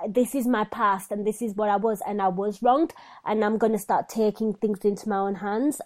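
ordinary talk

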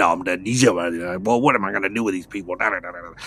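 irritable, low grumbling and muttering under the breath. Retelling a scene where a character comes back in: imitating angry mumbling and grumbling. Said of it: "You can hear him kinda mumbling and grumbling".

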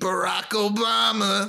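high, slow, clumsy put-on voice. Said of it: "He does a better Obama impression than that".

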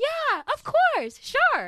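very high, loud sing-song voice. Speaker imitates how people in her town talked to her, imitating high-pitched talk. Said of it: "raise up their voice a little and just talk like this".

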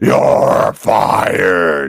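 low gruff voice, pushed out. Recalling a show about him, the speaker slips into a Vince McMahon voice. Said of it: "I started doing my Vince McMahon voice. ... like that".

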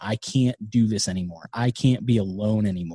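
mock crying, tearful pleading voice. Retelling a grandmother's call to the family: imitating someone crying. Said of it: "she was literally crying into the phone".

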